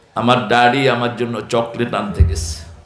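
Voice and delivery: ordinary talk, nothing marked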